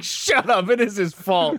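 slow, high-pitched, pointed, stern, each word dragged out. Retelling a movie scene: J K Simmons impression. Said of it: "J K Simmons is like".

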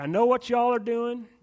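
put-on loud Texas accent. Recalling the same message heard every single week, delivered in a texas accent. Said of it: "But it was a Texas accent. It was like".

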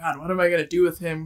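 mock-panicking, acted freaking out. Retelling how she reacted after he hid under the bed, imitating someone freaking out. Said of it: "she's like freaking out".

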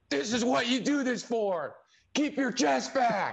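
shrill, very high-pitched, all-out screaming. Retelling how a fellow thrower screamed while waving a flag: retelling someone screaming. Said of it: "screaming at me".

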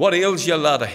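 put-on loud Scottish accent. Speaker retells a mother finding her crying son, in her Scottish accent. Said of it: "in her Scottish accent".

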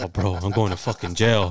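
mock-angry, acted pissed-off man voice. Retelling how a man who got locked in reacted; imitating an angry man. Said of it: "And he was pissed".

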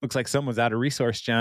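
ordinary talk

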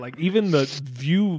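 ordinary talk

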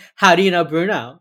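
very loud, jealous, demanding grilling. Retelling how Hotch questions Gideon about Bruno: mock jealous Hotch voice. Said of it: "He plays jealous husband to Gideon".

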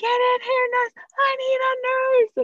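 all-out, shrill, very high-pitched screaming. Retelling calling for a nurse during labor, retelling her own screaming. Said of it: "And I was screaming".

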